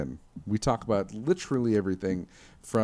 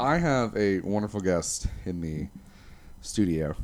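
ordinary talk

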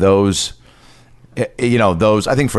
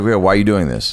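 normal talking voice

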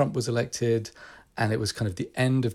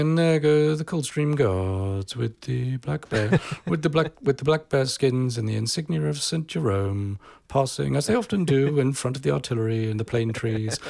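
put-on British commentator voice, pitched higher; 3 semitones higher than usual. Describing royal pageantry coverage, doing a close, muffled BBC commentator voice. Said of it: "close, muffled British voice going".

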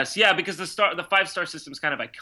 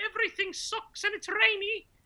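put-on very high-pitched English accent; 7 dB quieter than usual. Imitating what locals will say about the weather: english accent. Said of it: "Is that your English accent?".

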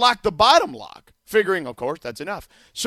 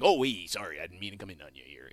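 very deep, very quiet, hushed murmur; 13 semitones lower, 12 dB quieter than usual. Redoing the impression on request, imitating Casey Kasem. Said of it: "Not a bad Casey Kasem".

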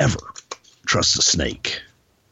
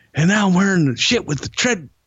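ordinary talk

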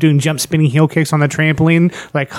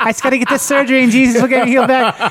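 put-on high, laughing, chipper kids' show host voice. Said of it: "He was totally chipper".

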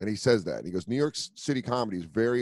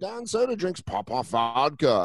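slow, cheesy, hacky put-on British TV host voice; 4 semitones higher than usual. Comedian retelling a bit he did on a show, in a hacky British TV host voice. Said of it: "I did that hacky voice".

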